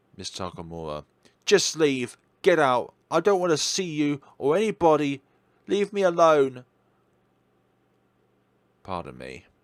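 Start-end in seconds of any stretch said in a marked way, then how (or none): 1.5-6.7 furious, loud, angry shouted outburst. The speaker turns on a kind neighbour, shouting. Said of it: "just shouting at your kindest neighbour".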